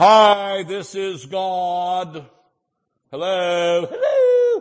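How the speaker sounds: very slow, drawn-out hi, pitch climbing. Acting out God speaking out loud: booming God voice. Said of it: "He doesn't always just booming voice tell you".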